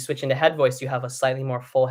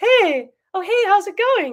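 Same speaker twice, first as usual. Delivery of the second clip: very high, light, cartoonish, raised sing-song head voice; 8 dB louder than usual. Showing how people use head voice without realizing it: head voice like talking to an animal. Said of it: "like talking to an animal or some sort of cartoonish character voice".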